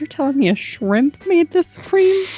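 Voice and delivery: said under one's breath. After rating a cream, the player's character mutters under breath. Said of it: "then say under my breath".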